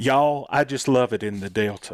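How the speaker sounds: put-on Deep South Mississippi Delta accent. Retelling what his mom said at the studio: imitating a Mississippi Delta accent. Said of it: "this voice that she has".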